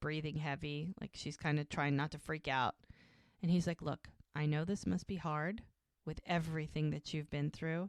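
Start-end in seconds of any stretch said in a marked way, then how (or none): none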